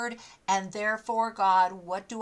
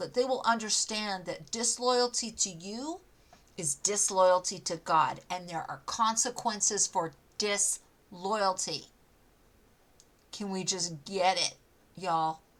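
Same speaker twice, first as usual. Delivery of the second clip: firm, stern, unbending tone; 2 semitones lower than usual. Urging listeners to pray against disloyalty: firm and stern. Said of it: "I'm being really firm and stern".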